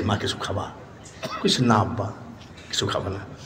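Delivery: low-pitched, soft, hushed voice.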